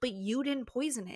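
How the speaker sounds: ordinary talk, nothing marked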